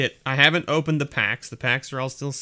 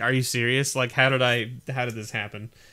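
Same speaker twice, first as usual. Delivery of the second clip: ordinary talk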